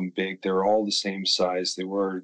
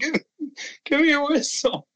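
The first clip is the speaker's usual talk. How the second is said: acted very high, shrill scream. Retelling calling to the ref mid-game: retelling own scream.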